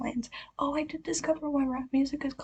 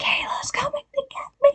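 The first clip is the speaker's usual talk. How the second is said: put-on very high-pitched, loud teenage screaming; 7 dB louder than usual. Retelling teenagers running through the neighborhood: imitating teenagers screaming. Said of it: "running around our neighborhood with their phones screaming".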